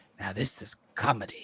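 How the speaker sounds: whispered, cackling sprite voice. Voicing a sprite laughing at a player's crushed egg: cackling sprite voice. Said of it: "the sprite cackling and says".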